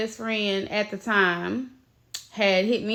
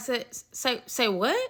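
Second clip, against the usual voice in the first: stammering, tripping over words in stunned shock; 4 dB quieter than usual. Retelling own reaction to shocking news on the phone: retelling stammered disbelief. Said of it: "had to literally chase behind the word because I couldn't get it out".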